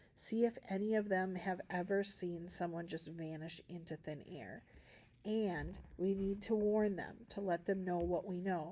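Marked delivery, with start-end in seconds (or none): none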